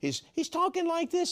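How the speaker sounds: put-on boyish high voice.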